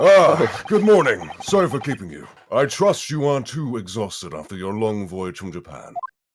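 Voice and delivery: loud, scary judge voice. Redoing the judge's greeting louder because he's big: louder scary judge voice. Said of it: "make him a bit louder".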